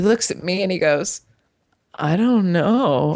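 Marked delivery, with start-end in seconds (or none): 1.9-3.2 mock frightened, scared, choked voice. Retelling how a man answered a woman's question, imitating a scared reply. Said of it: "And he got scared".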